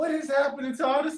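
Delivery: high, fast, baffled outburst.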